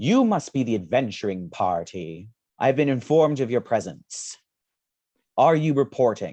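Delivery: loud, booming bellow. A game master voices a figure greeting the adventuring party, bellowing. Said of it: "as he just bellows".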